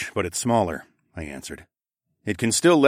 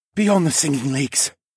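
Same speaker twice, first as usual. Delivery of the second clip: whispering, higher pitch; 6 semitones higher than usual. A demi-human answers where in the forest he saw the curse; whispering. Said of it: "the ox demi-human whispered".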